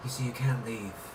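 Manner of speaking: creepy, soft, purring villain voice.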